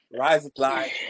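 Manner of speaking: bad put-on fake Australian accent. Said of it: "these Americans always need to mimic everyone's accent".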